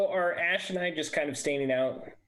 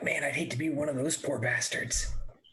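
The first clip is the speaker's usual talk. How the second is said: whispering in a character voice. Speaking in character to a companion while hiding: whispering in character. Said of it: "I'm gonna whisper to Ash".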